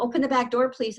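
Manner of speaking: ordinary talk, nothing marked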